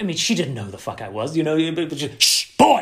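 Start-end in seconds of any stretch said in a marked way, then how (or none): 2.2-2.8 very high, loud shushing sound. Retelling being shushed on set, imitating Maggie Smith shushing. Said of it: "Maggie Smith shushed us".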